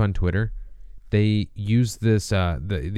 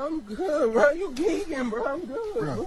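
fake crying voice, much higher and quieter; 5 dB quieter than usual. Acting out a clip someone shared, imitating someone crying. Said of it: "Are you crying, bro?".

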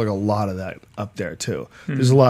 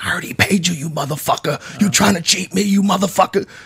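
shrill, very high-pitched screaming; 9 semitones higher than usual. Retelling how a customer screamed at the sandwich-slot server, mock-screaming. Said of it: "the guy just starts screaming".

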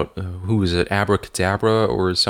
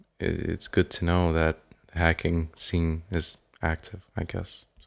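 quiet, disappointed, deflated, let-down tone; 2 semitones lower, 8 dB quieter than usual. Chatting with others who then remark on it, sounding disappointed. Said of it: "you sound so disappointed".

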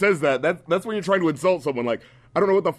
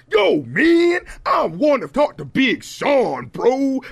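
pitched-up, swooping put-on voice; 8 semitones higher, 4 dB louder than usual. Mocking the way a man talks, imitating how he talks. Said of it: "you know the way he talks, he's like".

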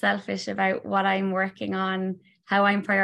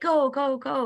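put-on high, yelling small child voice; 6 semitones higher than usual. Retelling dropping the kids at school as the 2-year-old daughter shouts, imitating toddler shouting. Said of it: "was like shouting at me".

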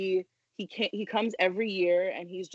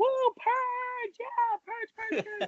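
mock screaming, much higher, slower. Speaker re-enacts screaming along with a friend, retelling screaming. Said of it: "I'm just screaming with him".

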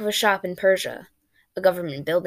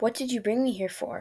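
rude-sounding, fearful, higher and quieter; 4 semitones higher, 6 dB quieter than usual. A woman brought to a small dark metal room questions the man, rude-sounding and fearful. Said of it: "Her curiosity and her fear made her voice sound rude".

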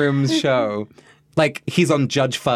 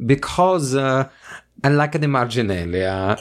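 put-on patchy Italian accent, partly some other accent. Starting the marginalia segment, now done in Italian accents: half-Italian put-on accent. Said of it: "Your Italian accent is like half Italian".

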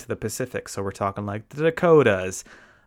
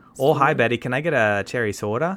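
put-on Midwestern American accent. Ordering a cherry soda to show soda sounds better: Midwestern accent. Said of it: "soda actually sounds better with a Midwestern accent. Like".

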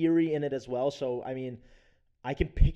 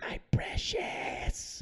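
horrible, bad, breathy, whispered creature voice. Helping listeners picture an actor: horrible Gollum impression. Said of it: "That was [name]'s horrible Gollum impression".

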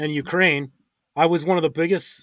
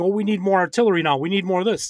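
play-acted, half-raised, insistent voice, repeated words; 2 semitones higher than usual. Retelling demands for more artillery: imitating Ukraine yelling. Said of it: "Ukraine keeps yelling".

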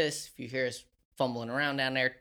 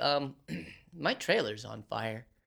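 mock utterly matter-of-fact, very calm, level, flat. Retelling a neighbor's news about his trailer: imitating a very calm voice. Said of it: "very calmly and without, like, anything else in his voice".

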